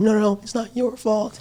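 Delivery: high, tearful, crying, soothing voice. Retelling the family in the bathroom comforting each other: imitating someone crying. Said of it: "And they're, like, crying".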